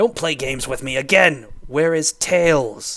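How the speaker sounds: loud, menacing voice with real threat. Narrator reading a story, a man with a pistol demanding an answer again, threatening tone. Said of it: "with more of a threatening tone in his voice".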